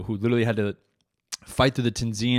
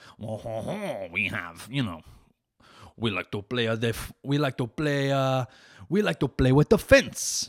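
slow put-on Parisian-style French accent. Joking about French fencers, talking like a Parisian. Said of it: "the French are like".

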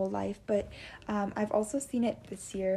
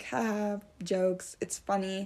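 normal talking voice

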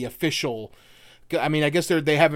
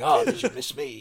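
sudden, unhurried, put-on British accent. Acting out Genesis stepping from behind an apple tree: British-accented Genesis voice.

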